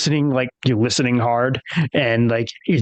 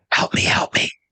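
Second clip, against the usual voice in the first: ghostly whisper. Voicing a voice that whispers in a character's ear: ghostly whisper. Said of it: "you hear a voice whisper in your ear".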